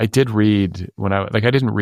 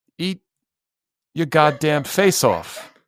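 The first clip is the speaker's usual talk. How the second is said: put-on halting, rhythmic voice, pitched higher; 8 semitones higher than usual. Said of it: "that is one of your better impressions".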